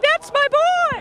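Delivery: high, slow, proud yelling.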